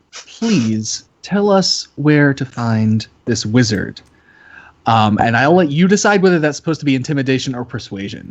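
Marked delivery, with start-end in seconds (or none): 0.2-4.0 close, slow, deliberate, leaned-in speech. A player's character leans down to a man, speaking quietly into his ear. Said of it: "and just quietly in his ears".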